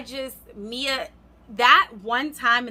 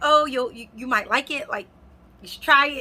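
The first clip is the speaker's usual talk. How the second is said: fast, coaxing, persuasive pleading; 4 semitones higher than usual. Retelling how a persuasive woman urged her to try something, imitating someone pleading. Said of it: "now she's kind of pleading".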